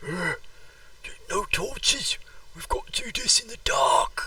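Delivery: very high, hoarse, loud stage whisper. Voicing a dwarf in a dark jungle, turning back: loud whisper. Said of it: "whispers loudly".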